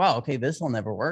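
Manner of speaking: ordinary talk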